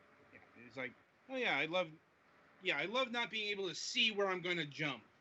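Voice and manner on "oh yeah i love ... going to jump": put-on mocking voice with heavy sarcasm. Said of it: "Note the sarcasm".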